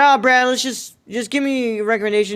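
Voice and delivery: normal talking voice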